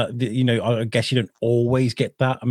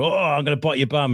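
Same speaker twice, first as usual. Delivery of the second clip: rough, gruff London gangster dinosaur voice; 3 semitones higher than usual. Chasing Timmy with a puppet dinosaur, the speaker does a gruff Londoner voice. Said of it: "I do it as a, a gruff like Londoner".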